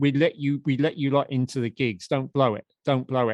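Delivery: plain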